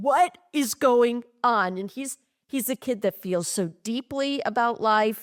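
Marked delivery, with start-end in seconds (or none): 0.0-1.8 hearty, slow delivery, full of gusto. Retelling a middle child's catchphrase, imitating it with gusto. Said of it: "it's with that gusto".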